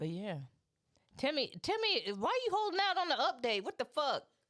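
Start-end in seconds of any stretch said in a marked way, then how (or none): 1.2-4.2 shrill, loud, very high-pitched yelling. Speaker calling out to timmy, yelling. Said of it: "Sorry, I was yelling".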